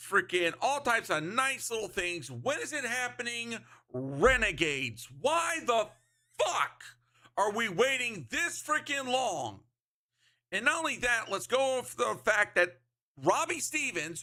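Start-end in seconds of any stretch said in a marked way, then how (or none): 2.3-9.6 furious, fed-up, angry ranting. A gamer complains about a game update, angry rant. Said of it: "I am so fucking pissed right now".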